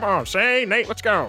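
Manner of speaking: put-on very high, old-time 1920s gangster voice. Retelling how others hurried shane and nate along, in a 1920s gangster voice. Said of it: "It sounds like a 1920s gangster".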